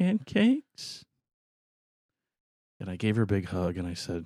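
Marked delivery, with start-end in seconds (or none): 0.0-1.0 very high, hopeful, pleading little voice. Retelling his daughter looking up, asking for pancakes: imitating a doe-eyed daughter asking. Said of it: "she just looked up doe-eyed".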